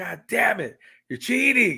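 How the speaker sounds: high, swooping, mad, accusing outburst. Retelling how a brother reacted to losing a video game: imitating brother being mad. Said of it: "He'd be all mad".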